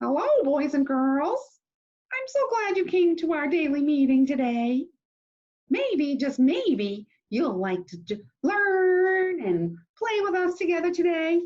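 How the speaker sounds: very high, tiny hand-puppet character voice. Speaker makes a hand puppet greet the boys and girls, in a little puppet voice. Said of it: "I can even give him a little voice".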